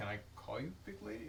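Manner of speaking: soft, quick, sincere and earnest.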